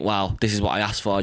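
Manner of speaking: ordinary delivery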